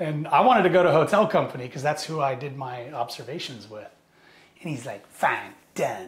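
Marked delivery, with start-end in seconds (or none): 5.1-6.1 put-on thick Boston accent, much lower, quieter. Quoting a man who welcomed him to 2nd Battalion, in a thick Boston accent. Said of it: "like thick, like Boston accent".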